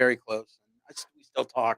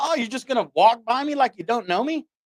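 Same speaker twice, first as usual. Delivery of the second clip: put-on shout, higher pitch; 9 semitones higher than usual. Retelling calling out to friends who walked past: retelling a yell. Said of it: "And I yelled at them".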